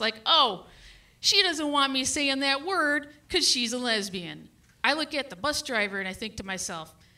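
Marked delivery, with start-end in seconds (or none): none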